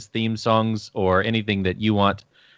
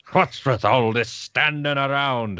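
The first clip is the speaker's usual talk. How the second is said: put-on fantasy dwarf character voice; 3 semitones higher than usual. Invited to do the dwarf voice, the speaker obliges: dwarf voice. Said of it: "You can do your dwarf voice there".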